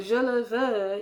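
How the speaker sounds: normal talking voice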